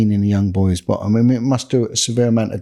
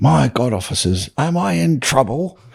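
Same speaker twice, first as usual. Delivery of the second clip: posh, plummy, put-on old Italian voice; 4 semitones higher than usual. Retelling what a man caught by officers said, in a plummy old Italian voice. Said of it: "in the most plummiest uh, sort of old Italian voice".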